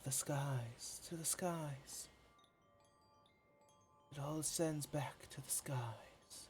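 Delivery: hushed, very quiet whispering. Voicing a mysterious voice the players hear on the wind: whisper on the wind. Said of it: "You hear a whisper on the wind".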